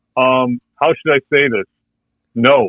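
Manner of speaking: ordinary talk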